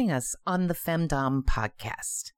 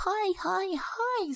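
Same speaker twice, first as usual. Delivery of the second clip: put-on very high, girly voice; 3 dB quieter than usual. Explaining how she does not sound on the phone, she shows a super high girly voice. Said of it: "this super, super girly, hi, hi, hi, super high voice".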